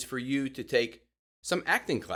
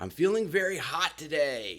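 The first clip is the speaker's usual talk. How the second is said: lively, upbeat, energetic, excited delivery; 2 semitones higher than usual. Podcast host showing the contrast between sick and excited, energetic and excited. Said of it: "Hear the dynamics between cold and hot, sick and excited".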